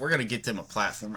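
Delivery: put-on sports host announcer voice. Imitating Pat McAfee offering to help: Pat McAfee impression. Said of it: "I just heard that in his voice".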